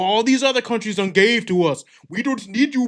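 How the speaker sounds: put-on Indian-sounding accent. Recounting Zelensky's meeting with Trump, in a Zelensky accent that came out Indian. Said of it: "That was more Indian".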